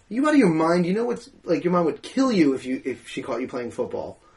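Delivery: plain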